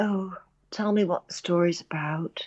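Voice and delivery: weary, listless, rather tired, bored voice. Imitating a bored sales agent asking about the story at Cannes: imitating a tired voice. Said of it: "in that sort of rather tired voice".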